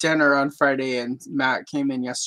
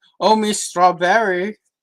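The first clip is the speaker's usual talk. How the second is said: put-on French accent, loud and high; 6 semitones higher, 7 dB louder than usual. Showing how a character who speaks in a French accent talks: French accent. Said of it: "very much the same French accent I do".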